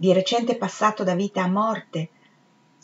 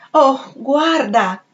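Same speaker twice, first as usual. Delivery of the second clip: high, raised, imploring, begging voice; 6 semitones higher, 6 dB louder than usual. A woman insists again to a man, imploring. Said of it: "ella implorò".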